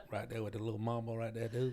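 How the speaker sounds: soft, put-on Vietnamese accent. Joining a story about playing marbles, in a Vietnamese accent. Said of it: "Are you doing a Vietnamese accent?".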